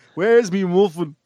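put-on mock Dublin accent. Repeating a line after others ask to hear it again, Dublin accent impression. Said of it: "That's a good impression".

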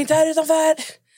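loud, high-pitched yelling. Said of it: "jag skrek sönder".

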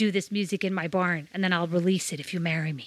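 fake American accent throughout. Acting out what he was probably saying, in a put-on American accent. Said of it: "And yes, that was my American accent".

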